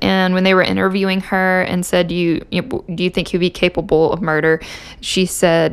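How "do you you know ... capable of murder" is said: normal talking voice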